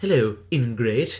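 loud, put-on animated cartoon voice. Saying the word ingrate the way an animated character would say it. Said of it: "I say it like that, like I think of one, I will say animated character".

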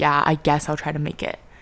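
mock-flat, monotone delivery. Retelling how someone the speaker invited to hang out replied, imitating a monotone reply. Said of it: "it was just so monotone".

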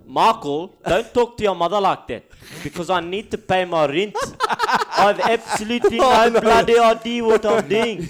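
very high-pitched, loud put-on South African accent. Taking a turn at impressions, trying a South African accent. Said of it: "hardest accent to do, but I'll give it a shot".

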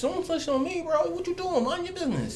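very high, soft, pleading mock whining voice.

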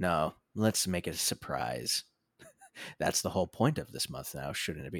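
spooky, eerie, low and soft creepy voice. Teasing the next Horror Month installment as a surprise, in a creepy voice. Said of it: "I'm talking creepily like that".

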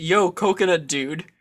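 plain

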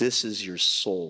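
demonic, demon-like put-on voice. Recalling a voice heard while looking at an eight ball: demonic voice. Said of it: "it was a demonic voice".

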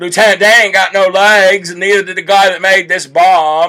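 mocking, poking-fun put-on movie hero voice. Mocking a man's bad accent by imitating him: mocking Forrest Gump voice. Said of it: "trying, like, to be Forrest Gump".

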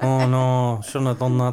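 put-on accent shifting from Scouse to Irish. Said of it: "What accent was that?".

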